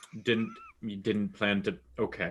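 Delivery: very quiet, hushed, expressionless, flat deadpan. In a tabletop game, a character looks at another player's character, deadpan. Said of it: "look at you deadpan like".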